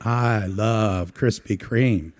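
very slow, drawn-out, deep put-on Southern accent. Acting out a man who craves a donut he couldn't have; put-on southern accent. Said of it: "You have to say it with a Southern accent".

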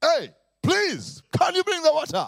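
loud, very high voice. Telling a story, a father asks his son a third time for water: retelling a loud request. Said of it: "spoke to me in a very loud voice".

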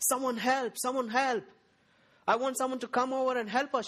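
mock all-out screaming at full voice, high. Retelling the day their mom came shouting, imitating mom shouting for help. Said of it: "my mom came shouting".

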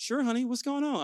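calm, easygoing, unbothered, smooth reply, acted out. A father acts out his usual reply when his kids run to him for help: retelling a smooth, chill reply. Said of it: "smooth and chill".

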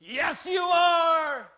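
mock rousing loud group shout, "are" drawn out. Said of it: "fourteen people yelling, screaming".

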